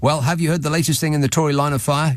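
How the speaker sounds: plain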